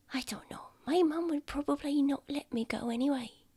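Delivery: high, hushed, barely audible whisper. Retelling what she said after the door clicked, retelling a whisper. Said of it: "I'm whispering".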